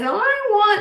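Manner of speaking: put-on very high, whining little-kid voice. A speaker mimics their three-year-old twins whining, imitating a whining three-year-old. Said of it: "when you talk like this".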